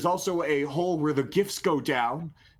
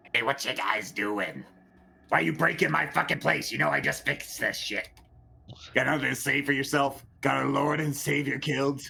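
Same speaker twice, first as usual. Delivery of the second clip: gremlin voice, much faster. Game master voices a gremlin shipwright confronting the players, gremlin shipwright voice. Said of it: "a gremlin shipwright appear".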